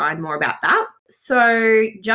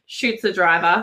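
ordinary talk, nothing marked

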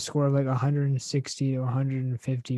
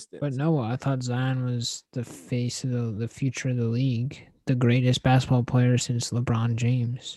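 normal talking voice

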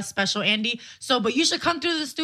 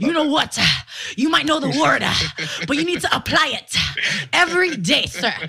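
louder mock Georgia preacher delivery; 4 dB louder than usual. Telling another speaker to apply the word every day: put-on Georgia preacher voice. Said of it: "you sound like a Georgia preacher".

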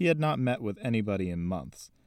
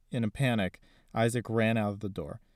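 ordinary delivery, nothing marked

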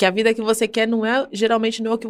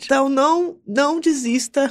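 emotional, tearful, crying, moved voice; 4 semitones higher than usual. Speaking to her audience, moved by happiness rather than sadness, emotional. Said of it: "Eu fico emocionada que eu tô emotiva".

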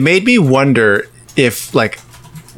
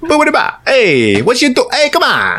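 bad put-on Italian accent; 12 semitones higher than usual. Speaker asked to do his known bit, in a bad Italian accent. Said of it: "bad Italian impression".

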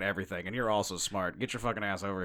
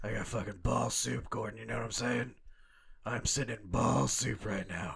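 put-on breathless superhero voice. Playing Batman talking to Gordon in a bit, Batman voice, out of breath. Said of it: "You need some oxygen, Batman?".

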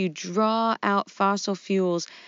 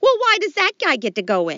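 pitched up, tune swinging wide; 7 semitones higher, 6 dB louder than usual. Playing the Costello part in a parody sketch: Lou Costello voice. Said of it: "playing the part of Lou Costello will be [name]".

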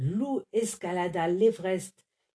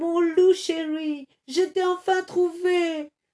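cried out very high; 10 semitones higher, 4 dB louder than usual. Narrator reads someone close by crying out to Loup. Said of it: "entendit un cri".

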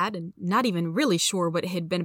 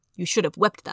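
ordinary delivery

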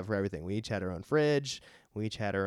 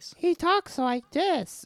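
put-on very high-pitched, cute small child voice. Describing a character to the other speaker, showing how he talks: Blanket's cute little kid voice. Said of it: "this cute little kid voice".

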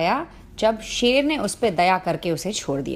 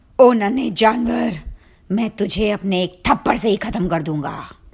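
angry, growling lion voice; 4 dB louder than usual. Reading a fable, the angry lion speaks to the mouse: lion growling angrily. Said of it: "वो गुर्रा के बोला".

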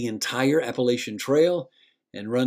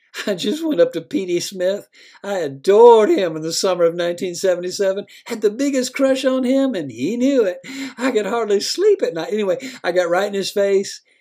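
put-on high, loud, slurred speech with giggling throughout; 8 semitones higher, 6 dB louder than usual. A woman comes back to the narrator to announce her news, slurring and giggling. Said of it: "in a moderately slurring voice, giggling as she went".

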